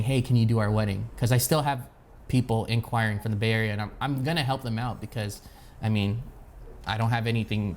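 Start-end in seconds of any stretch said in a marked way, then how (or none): none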